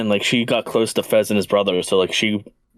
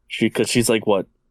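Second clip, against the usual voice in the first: normal talking voice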